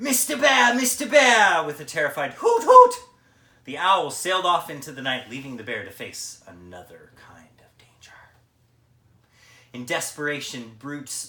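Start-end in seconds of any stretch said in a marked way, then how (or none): 0.0-1.6 screechy witch voice, shrill, very high. Reading a story aloud to a child, a voice calling to the bear, screechy voice. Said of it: "A screechy voice split the air".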